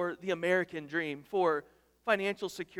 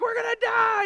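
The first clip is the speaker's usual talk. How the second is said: very high, loud, panicked screaming; 9 dB louder than usual. Retelling what a panicking kid in the water said, imitating screaming in panic. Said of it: "and he's screaming".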